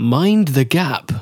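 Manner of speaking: train announcement voice. Speaker tells a co-host how they sounded reading out names, in tube announcer voice. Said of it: "the person who does the announcement".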